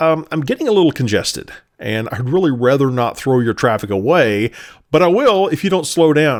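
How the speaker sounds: plain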